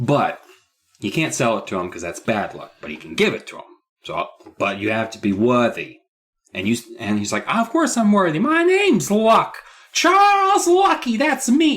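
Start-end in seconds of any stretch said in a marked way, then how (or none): 7.5-11.8 very high, slow, cheeky little rascal voice. Retelling a book scene, acting out the boy's reply: little rascal voice. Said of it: "like a rascal, a little rascal".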